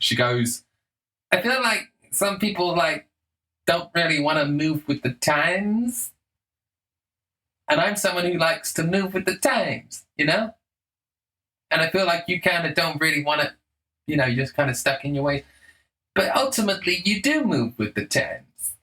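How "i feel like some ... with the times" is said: nasally voice with the word times dragged out. Retelling what a woman said to a man, imitating her nasally voice. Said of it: "she's got this kind of like nasally voice".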